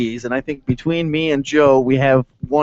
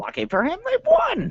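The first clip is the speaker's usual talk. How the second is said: very high little puppet-character voice; 5 dB quieter than usual. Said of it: "I'm gonna be in Muppet voice".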